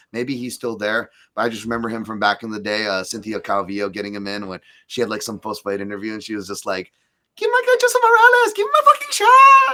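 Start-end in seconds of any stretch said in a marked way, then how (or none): 7.4-9.8 put-on very high, very loud, belted voice, Latin American accent.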